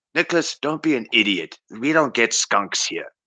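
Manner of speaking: patronizing, know-it-all, condescending talking down. Recounting how his older brother used to talk down to him, imitating a condescending tone. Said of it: "he always spoke to me with this condescending tone".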